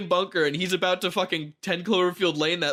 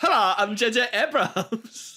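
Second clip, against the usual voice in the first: put-on German accent mixed with valley girl voice; 4 semitones higher than usual. Mocking a director, introduce yourself as J.J. Abrams, like a German by way of the Valley. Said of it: "He's like a German by way of the valley".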